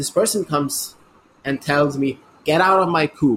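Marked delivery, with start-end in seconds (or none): 2.4-3.4 mock, loud, high, raised shout. Retelling a passenger ordering the speaker out of the train coop: imitating someone shouting. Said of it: "you don't have to shout at me like this".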